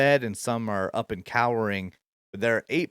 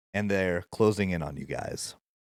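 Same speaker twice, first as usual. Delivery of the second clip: normal talking voice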